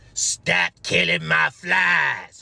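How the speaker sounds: very slow, gurgling, phlegm-filled rasp. Retelling what a woman in the psych ward said: imitating a phlegmy, gurgly voice. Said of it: "this woman with a phlegmy and gurgly voice".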